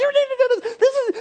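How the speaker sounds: very high, shrill, commanding yelling. Retelling a small girlfriend yelling at a huge lineman: imitating a girlfriend yelling. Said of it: "she would just start yelling at him".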